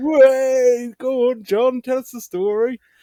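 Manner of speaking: put-on drunk English accent. Retelling drunk pub regulars urging a man to tell his story: imitating drunk english pub men. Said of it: "throw me a English accent in there".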